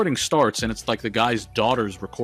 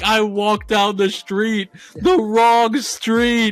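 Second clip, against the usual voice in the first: put-on screaming, pleading, higher and louder; 11 semitones higher, 6 dB louder than usual. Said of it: "He just screamed".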